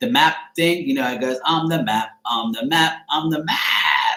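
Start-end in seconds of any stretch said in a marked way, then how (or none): 1.4-4.2 very slow cartoon character voice, words stretched out. Recalling holding a young nephew and doing the Map voice from Dora. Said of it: "I used to do the voice perfectly".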